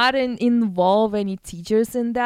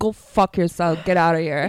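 put-on menacing gangster talk, much lower; 6 semitones lower than usual. Retelling how their mom told off a girl, imitating her talking like a gangster. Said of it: "she talked to her like a gangster".

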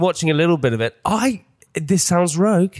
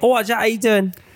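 put-on South London voice, higher; 5 semitones higher than usual. Playing Danny in a skit while the other speaker plays Jack. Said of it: "I'll pretend I'm Danny".

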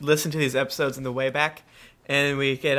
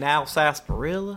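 put-on Kentucky-style Southern accent. Teasing another player by imitating his character voice: imitating Woody Southpaw voice. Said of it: "you're like".

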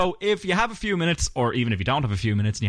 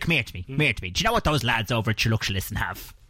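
put-on working-class Dublin old-lady voice; 3 semitones lower than usual. Doing a podcast plug as Granny Bitters: Granny Bitters voice. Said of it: "steal the lauded character of Granny Bitters".

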